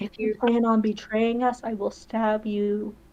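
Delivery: whispering. Role-playing, leaning close to whisper in the car guy's ear; whisper. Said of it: "Who are you whispering that to?".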